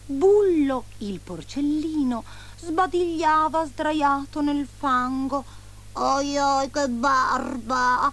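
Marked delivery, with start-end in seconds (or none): 5.9-8.1 grunting exclamation, slower and higher. The piglet, yawning in the mud on Christmas night, exclaims with a grunt. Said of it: "esclamò con un grugnito".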